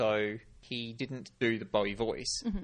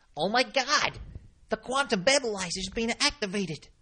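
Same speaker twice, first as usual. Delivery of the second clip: twangy nerd voice, much higher pitch, louder; 12 semitones higher, 5 dB louder than usual. Showing a voice found perfect for a computer nerd, twangy computer-nerd voice. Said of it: "really twangy sort of thing".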